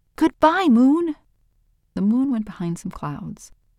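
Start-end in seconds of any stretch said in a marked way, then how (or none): 0.2-1.2 yelling with all his might, very loud and high. Owl, at the top of a hill, calls to the moon, shouting as loudly as he can. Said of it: "He shouted as loudly as he could".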